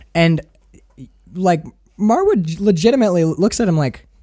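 ordinary delivery

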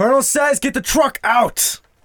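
very loud, very high-pitched yelling. A player's character calls out an order to the soldiers, yelling an order. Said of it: "I yell out".

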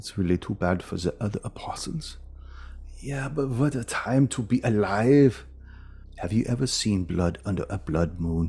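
put-on thick German accent, kept soft, aside. Retelling what people were overheard saying, in a low, thick german accent. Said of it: "in a low, thick German accent".

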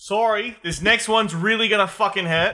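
shrill, shrieking, high and loud scream. Speaking in character in a game after being reminded to scream: screaming. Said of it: "you have to scream, remember".

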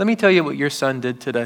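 ordinary talk, nothing marked

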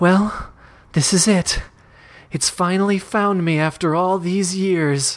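resigned, sinking dread. Narrator reads the heroine's thought as the creature bears down, with a sinking feeling. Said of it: "she says".

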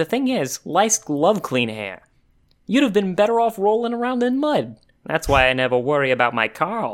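put-on Yiddish-inflected accent. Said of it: "try to imitate her accent".

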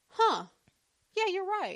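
acted sudden realization. Retelling how a man said it, acting a sudden realization. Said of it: "in a realization. kind of way".

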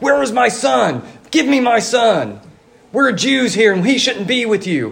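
insistent, demanding, put-on yelling. Retelling a mother demanding her son from militia leaders: imitating her yelling. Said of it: "was just yelling at the men in charge".

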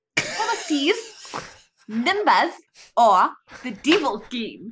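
New Zealand accent. Asked to try the same line in another accent, new zealand accent. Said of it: "What does it sound like in a New Zealand accent?".

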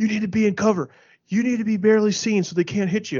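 mock, high-pitched screaming. Retelling how a gaming partner screamed orders during Fortnite: imitating someone screaming. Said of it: "he's screaming".

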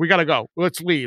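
ordinary talk, nothing marked

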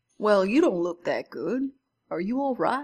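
put-on Georgian-accented speech. Retelling what a man on a plane said to a sick passenger: Georgian accent. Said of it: "He had the Georgian accent".

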